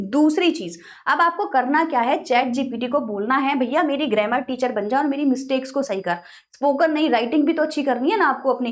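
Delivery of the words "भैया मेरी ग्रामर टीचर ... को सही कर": usual speaking voice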